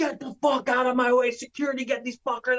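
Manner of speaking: raging, furious screech, pitched way up high. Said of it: "Vince comes off the stage in a fucking fury".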